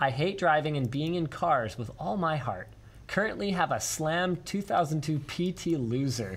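usual speaking voice

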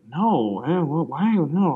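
put-on murmur. Retelling how an off-screen person answered the offer of a pilot, imitating a murmur. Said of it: "you just hear this murmuring".

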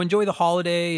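usual speaking voice

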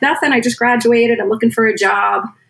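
normal talking voice

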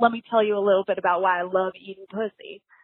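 put-on Southern accent. Retelling the opening line of a monologue from a scene: imitating a southern accent. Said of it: "in a Southern accent".

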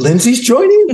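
very high, laughing, mock-delighted gasp. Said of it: "You're like".

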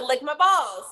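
plain

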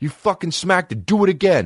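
play-acted, shrill, very high, furious raging scream. Retelling a confrontation with a man who walked away, retelling his own scream. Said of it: "I scream at this guy".

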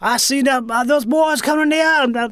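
put-on Louisiana Cajun man's accent. Speaker recalls a man they knew who talked Cajun: imitating Elster Gaspar's Cajun talk. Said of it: "a classic Cajun dude talk".

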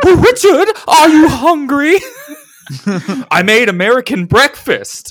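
very high voice swooping around in pitch. Voicing the character's mother in a comedy script reading: Mrs. Doubtfire voice. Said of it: "leaning into being Missus Doubtfire briefly".

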